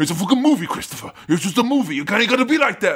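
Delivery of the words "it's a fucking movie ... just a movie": scolding, laid-down mob boss voice. Show Sam how to be like Tony Soprano grabbing Christopher, in a Tony Soprano impression. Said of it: "gotta be all like Tony Soprano and grab Christopher and be like".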